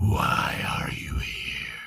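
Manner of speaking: pit fiend voice that vibrates in your bones. Voicing a pit fiend on a throne questioning a player: pit fiend voice that vibrates in your bones. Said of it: "you can feel the vibration of its voice in your very bones".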